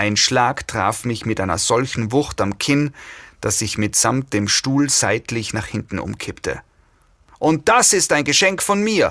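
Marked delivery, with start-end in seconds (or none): 7.4-9.1 high-pitched, screamed. A woman jabbing the narrator with her finger, screamed. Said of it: "schrie die Frau".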